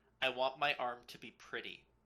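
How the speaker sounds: dry, flat, expressionless deadpan delivery. A player voicing their character, turning to a companion during the game, deadpan. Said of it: "turn to Syl deadpan and go".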